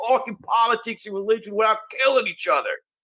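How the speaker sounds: very high-pitched New Jersey accent. Saying a line about politics and religion like a jersey boy: new jersey accent. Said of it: "say it like a Jersey boy".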